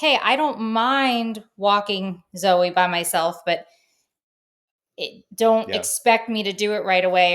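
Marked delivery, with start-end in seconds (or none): none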